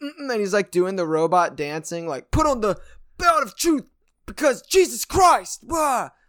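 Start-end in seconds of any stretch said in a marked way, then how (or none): 2.3-6.1 very high, shrill, loud, fired-up shouting. Act out a former gang member hyped about the armor of God, imitating someone yelling. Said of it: "like yelling".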